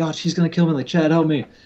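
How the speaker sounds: high-pitched shrieking scream. Retelling Sean sneaking something out of the office, imitating Sean screaming. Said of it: "he was screaming like".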